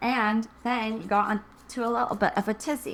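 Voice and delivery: horrible, bad, fake put-on English accent. Addressing the listener directly, in a horrible English accent. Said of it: "Sorry for my horrible English accent".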